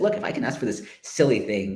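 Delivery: ordinary talk, nothing marked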